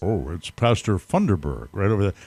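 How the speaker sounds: deep, dropped voice of God. Acting out a pastor arriving at the gate, God's voice. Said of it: "I'll do God's voice".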